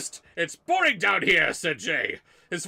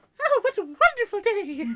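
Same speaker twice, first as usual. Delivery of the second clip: put-on cheerful princess voice, pitched higher; 14 semitones higher than usual.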